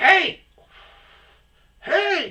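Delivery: very high, loud yell of hey. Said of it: "Are you yelling at me?".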